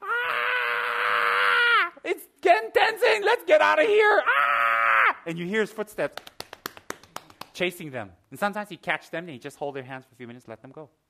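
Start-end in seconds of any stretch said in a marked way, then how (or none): 0.0-5.2 shrieking, very high, very loud, drawn-out screams. Retelling women down the street running away: imitating women screaming. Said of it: "some women down the street screaming".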